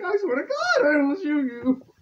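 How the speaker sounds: very high, very loud, shrill shout with voice cracking. Quoting an actor's line from a movie, imitating The Wicker Man's voice-cracking yell. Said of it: "When he voice cracks".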